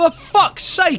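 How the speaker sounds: angry shout.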